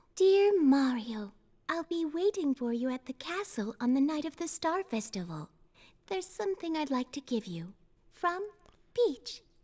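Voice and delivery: low and soothing voice. Reading a signed letter in character: soothing Princess Peach voice. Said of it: "She's got a very soothing voice".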